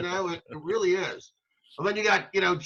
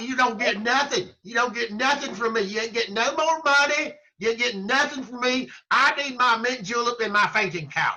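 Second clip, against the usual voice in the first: derisive, ridiculing politician voice, pitched up; 5 semitones higher, 3 dB louder than usual. Imitating the senator refusing more money: impression of Lindsey Graham. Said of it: "You gotta work on that one".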